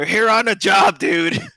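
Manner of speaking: loud, high exasperated shout.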